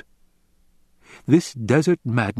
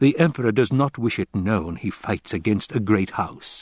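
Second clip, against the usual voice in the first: ordinary delivery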